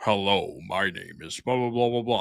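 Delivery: stadium announcer-style intro delivery. Describing a stadium announcer who just has that voice, doing a stadium announcer voice. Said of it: "He just has like the announcer voice".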